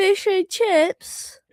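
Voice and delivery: put-on British accent. Asked to say their favorite food with a British accent. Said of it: "Can you say it with a British accent?".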